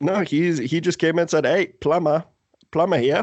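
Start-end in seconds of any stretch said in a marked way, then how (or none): 1.4-3.2 put-on Australian-accented voice. Retelling what the plumber said when he came in, Australian accent. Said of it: "That's my Australian accent".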